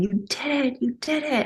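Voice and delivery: high-pitched, excited scream.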